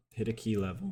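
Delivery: voice breaking and cracking on the words. Reviewing a trade setup aloud, voice cracking. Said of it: "my voice just cracked".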